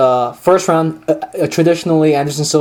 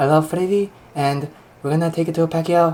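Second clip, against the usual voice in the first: hyped, big-talking boxer voice; 6 dB quieter than usual. Imitating a boxer in the corner after another impression: Pacquiao impression. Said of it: "You trying to sound like Pacquiao now".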